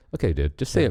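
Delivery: plain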